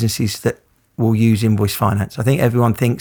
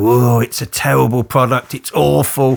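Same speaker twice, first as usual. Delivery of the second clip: mimicked skeptical, dismissive tone. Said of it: "I say it in that tone because they'll go".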